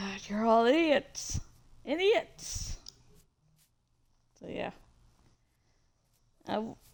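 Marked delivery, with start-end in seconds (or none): 0.0-2.8 slightly harsh, scolding tone. Repeating Jake's line as a leader would say it: imitating Jake, slightly harsh. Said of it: "he needs to be a, like, slightly harsh".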